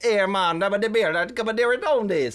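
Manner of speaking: put-on Jamaican accent gibberish, high and slow. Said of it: "That's kind of what you're saying".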